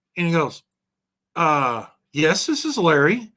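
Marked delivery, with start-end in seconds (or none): 1.4-3.2 subdued, tentative, quiet, slow. Retelling a phone call, imitating the caller going quiet. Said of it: "he gets real quiet".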